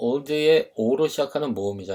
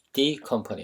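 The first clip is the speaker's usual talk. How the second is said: leaning hard on a stressed, lengthened "the"; 4 dB quieter than usual. Showing how to emphasize 'the company' in English, stressed, lengthened 'the'. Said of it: "정말 갑자기 그 회사를 강조하고 싶을 때 the company 이런 식으로".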